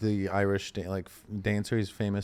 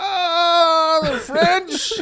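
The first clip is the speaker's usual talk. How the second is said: put-on drunk, very high, booming drawl, stretched "ah"; 9 dB louder than usual. Act out his champagne commercial from the end of his life, drunk Orson Welles impression. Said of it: "he's like fucking hammered".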